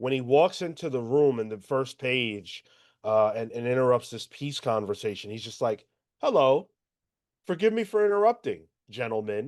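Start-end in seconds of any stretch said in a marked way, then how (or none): 6.2-9.5 overly polite, far too nice, nice-as-pie voice. Retelling Bane interrupting a peace conversation: overly polite Bane voice. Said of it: "but he's so nice about it".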